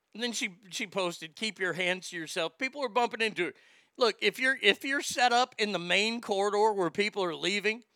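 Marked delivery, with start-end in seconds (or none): none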